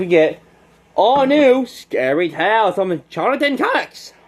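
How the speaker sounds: breaking voice, cracking mid-line. Speaker listing new comics, not used to doing this: voice cracking. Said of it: "My voice cracked".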